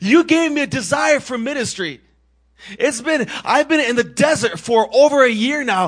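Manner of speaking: play-acted crying out. Recounting walking and calling out to God, acting out past upset yelling. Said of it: "I'm yelling".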